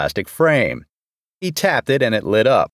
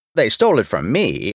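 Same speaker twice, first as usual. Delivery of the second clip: ordinary delivery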